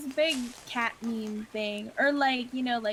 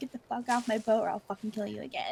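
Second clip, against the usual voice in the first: put-on furious, unhinged, angry, heated outburst. Retelling what was yelled at players hopping in the boat: imitating own angry threat. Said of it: "it just really set me off".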